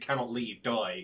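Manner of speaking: ordinary delivery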